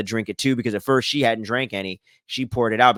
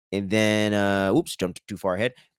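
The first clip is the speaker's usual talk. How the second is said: ordinary talk, nothing marked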